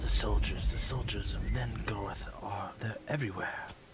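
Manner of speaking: low, hushed, near-whisper, between breaths. A man who has stopped running speaks to you: low voice, almost whispering. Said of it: "he begins to talk in a low voice, almost whispering".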